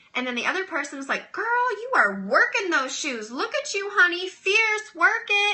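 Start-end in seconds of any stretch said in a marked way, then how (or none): 1.4-5.6 put-on bubbly, enthusiastic, peppy, high voice. Retelling how the other person talks while you try on shoes, imitating a peppy voice. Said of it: "that has her peppy voice on".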